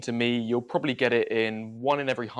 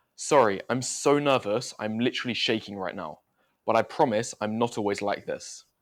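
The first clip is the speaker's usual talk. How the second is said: plain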